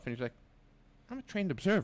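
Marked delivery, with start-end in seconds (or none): 1.1-1.9 high, put-on matter-of-fact tone. Retelling what someone said to them: imitating a matter-of-fact tone. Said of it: "so matter of fact".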